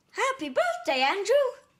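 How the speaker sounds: high-pitched, loud, little cartoon mouse voice. Asking Lucas to try, the speaker demonstrates a birthday greeting in Mickey Mouse voice. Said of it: "Can you do happy birthday in Mickey Mouse's voice?".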